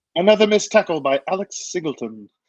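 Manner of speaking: posh upper-class British accent. Trying out another voice for their show, the speaker does play-by-play; higher-class british accent. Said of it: "higher class British accent".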